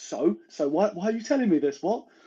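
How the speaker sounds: put-on slow, aggressive, confrontational retort. Retelling a film scene, imitating a character's aggressive reply: imitating an aggressive retort. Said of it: "he acts really aggressive".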